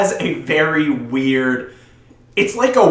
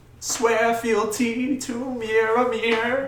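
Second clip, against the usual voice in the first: imitated female voice; 6 semitones higher, 6 dB quieter than usual. Repeating a wedding line the way she said it, imitating her voice. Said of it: "in her voice, of course".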